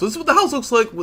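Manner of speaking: high, rushed, very high voice breaking mid-word. Showing what the game's house looks like with cosmetics, voice cracking. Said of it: "that was a voice crack".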